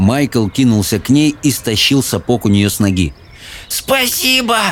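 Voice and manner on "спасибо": put-on very high, winded, breathless wheeze. Narrator reads a character's line after someone pulls off her boot; wheezing, out of breath. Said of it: "запыхавшись, просипела Софи".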